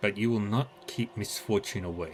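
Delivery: ordinary delivery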